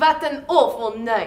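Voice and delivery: put-on generic Eastern European accent. Reading a play aloud as Isabella, the actor speaks in a general Eastern European accent. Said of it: "[name], what accent is that?".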